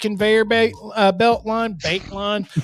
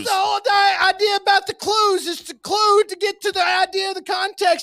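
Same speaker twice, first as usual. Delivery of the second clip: ranting yell, pitched higher; 11 semitones higher than usual. Explaining the idea of context clues: yelling like Bill Cosby ranting. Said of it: "yelling like Bill Cosby having a rant".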